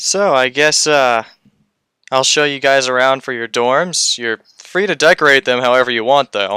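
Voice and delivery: unsure, hesitant, casual tone. A new teacher character shows the group to their dorms: hesitant new teacher. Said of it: "You can tell that he's still new to this whole being a teacher thing. / he shows you guys to your rooms. / It's my job as a teacher".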